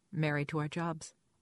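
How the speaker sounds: ordinary delivery, nothing marked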